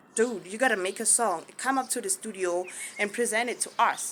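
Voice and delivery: plain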